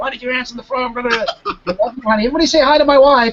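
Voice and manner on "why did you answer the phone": put-on angry yelling, much higher pitch. Retelling his wife yelling after he answered her call on stage, imitating wife yelling. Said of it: "she's yelling at me".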